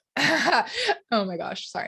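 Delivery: very slow, drawn-out words broken by laughing. Reacting to something in the chat mid-talk, laughing while talking. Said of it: "I'm laughing at the chat".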